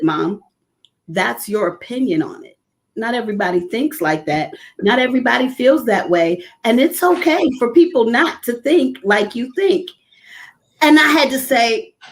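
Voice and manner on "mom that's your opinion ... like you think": acted, composed, steady, calm, even-toned delivery. Retelling a daughter's reply during a disagreement: imitating a calm reply. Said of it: "and she very calmly said".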